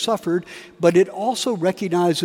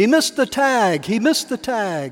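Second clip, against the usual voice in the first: mild, restrained half-shout; 4 semitones higher than usual. Retelling a commercial where Bob Uecker screams alone in the upper deck: Bob Uecker screaming. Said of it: "He's screaming".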